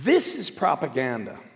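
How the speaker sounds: ordinary talk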